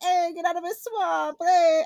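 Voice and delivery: put-on loud, high-pitched Italian accent. Retelling a guy's Shrek impression done in an Italian accent. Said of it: "he just starts like an Italian accent".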